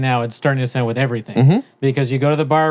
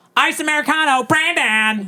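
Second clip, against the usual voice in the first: put-on very high, shrieked scream; 14 semitones higher than usual. Act out someone calling out an order at the counter for Brandon, imitating someone screaming. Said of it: "Like like like scream".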